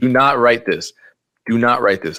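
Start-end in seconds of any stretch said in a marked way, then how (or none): 0.0-0.9 raised voice, sarcastic, mock tone. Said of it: "I am joking. I'm being sarcastic".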